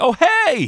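forced, put-on enthusiasm. Describing stepping out of oneself to greet someone: fake enthusiasm. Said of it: "fake my enthusiasm. You know that kind of like".

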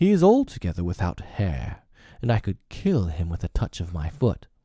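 ordinary delivery

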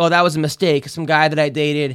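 ordinary talk, nothing marked

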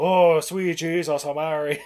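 put-on strong, thick, slow, laid-on Irish accent. Retelling what the reverend says on seeing the blob: super Irish accent. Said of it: "I sound like he's got a super Irish accent".

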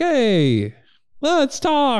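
hello very high and sing-song, pitch swinging. Imitating a friendly basketball player who welcomes anyone: Chris Paul impression. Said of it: "that's a great Chris Paul impression".

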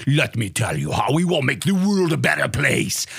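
put-on very thick, heavy German accent. Ranting about the man running things, quoting him as Klaus Schwab in a thick German accent. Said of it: "thickest German fucking accent".

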